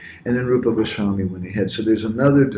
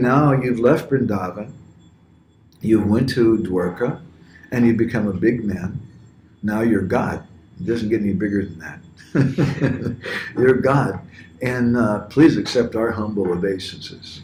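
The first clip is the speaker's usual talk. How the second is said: very sarcastic, with mock reverence. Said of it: "They say in a very sarcastic kind of way".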